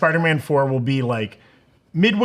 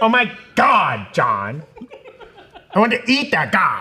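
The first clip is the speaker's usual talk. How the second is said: put-on full, sing-song Valley Girl voice; 3 semitones higher than usual. Imagining their symbiote speaking, the speaker does a valley girl voice. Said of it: "symbiote to be full Valley Girl".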